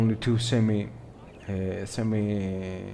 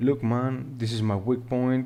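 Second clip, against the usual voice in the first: usual speaking voice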